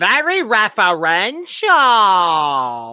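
belted loudly, pitch swinging widely. Imagining Fozzie judging Drag Race, line in a Fozzie impression. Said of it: "my Fozzie impression".

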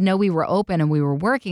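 ordinary talk, nothing marked

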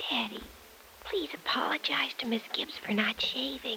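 very quiet, whispered aside. Whispering a request to daddy in front of a guest: whispering. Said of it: "I just have to whisper something".

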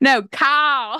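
put-on Australian accent, loud, high, one word drawn out. Retelling how he corrected the name, imitating an Australian accent. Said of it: "most insane Australian voice I've ever heard".

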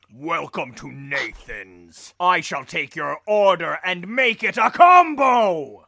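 booming, loud voice, words stretched out. Imagining a big guy as the front desk guy at Nathan's, Thor voice. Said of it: "that was your Thor voice".

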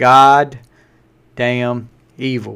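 very slow, careful, deliberate, word by word. Naming a band's latest album, careful not to get in trouble: said very slowly. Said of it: "I have to say this really slow".

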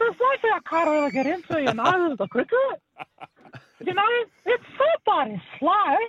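very high, swooping, really high-pitched male voice. Retelling what a guy says, imitating a high-pitched voice. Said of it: "he's got the really high-pitched voice".

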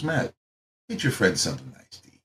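hushed, soft, low, monk-like murmur. Retelling what the owner said to a friend, talking like a little monk. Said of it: "Talk like a little monk".

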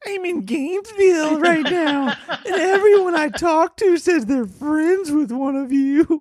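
very high, pitched-way-up voice. Reading out a message the other speaker wrote, imitating the other speaker's voice. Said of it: "let me do your voice".

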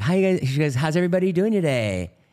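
very high, loud, calm yoga-teacher voice. Imitating the yoga teacher greeting the class: imitating a zen yoga teacher. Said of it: "she'll be like".

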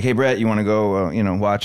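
ordinary talk, nothing marked

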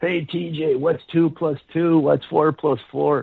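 high, far-off, mocking yell.

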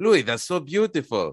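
put-on heavy Greek accent, laid on thick. Recalling his father hearing him play by ear, thick Greek accent. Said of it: "He had a very thick Greek accent".

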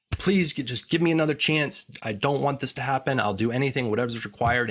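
desperate, begging plea, over and over. Retelling a near-death experience, answering the voice that said they were dead, retelling begging. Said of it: "And I begged and begged".

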